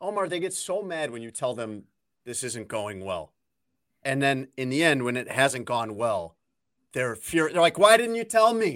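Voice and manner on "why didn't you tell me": put-on high, loud, whiny, thick Boston accent. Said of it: "I went Boston accent there for a second".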